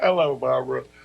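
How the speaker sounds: cheerful, bright voice. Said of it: "You sound very cheerful".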